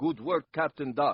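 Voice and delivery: very bad put-on Russian accent. Retelling delivering one movie line as a thirteen-year-old: very bad Russian accent. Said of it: "a very bad Russian version".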